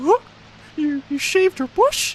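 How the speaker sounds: squeaky, very high cartoon mouse voice. A streamer answering a chat request, Mickey Mouse voice. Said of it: "Mickey Mouse version?".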